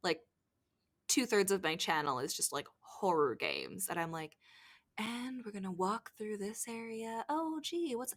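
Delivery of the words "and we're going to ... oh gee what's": quiet, lowered, hushed, close-to-the-mic voice. Retelling own late-night game commentary: imitating own lowered quiet voice. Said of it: "lower my voice so that I'm a little bit quieter".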